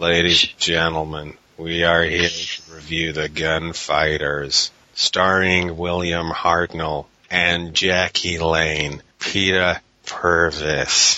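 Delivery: fake American accent, bad, slow and drawn out. Introducing a review of the gunfighters: bad put-on american accent. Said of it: "Allow me. American accent".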